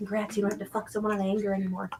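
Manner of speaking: soft half-whisper, very close in. Voicing a character who flies to another's ear: half-whispering in character. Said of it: "flies up to Styx's ear and whispers".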